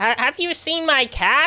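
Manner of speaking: squawked, high-pitched and loud. Trying to show the way a man talks though you can't really do it, like the parrot from Aladdin. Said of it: "like the parrot from from Aladdin".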